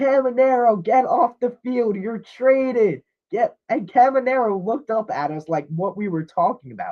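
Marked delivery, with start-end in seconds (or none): 0.0-3.0 put-on kid voice, screaming, pitched up, easy. Retelling how a kid at the game screamed at a player: imitating a kid screaming. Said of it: "and he's screaming".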